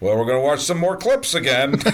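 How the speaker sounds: mock snide, snarky little voice. Retelling what their eleven-year-old son said as clips play, imitating Aiden's snarky voice. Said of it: "he just sort of says it in a little snarky voice".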